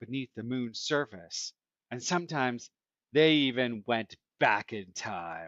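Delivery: ordinary delivery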